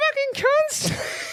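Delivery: very high, squeezed, squeaky voice. Retelling how a passing cyclist shouted back: imitating a very high-pitched voice. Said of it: "the most high-pitched voice I've ever heard".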